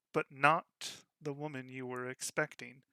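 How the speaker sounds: ordinary delivery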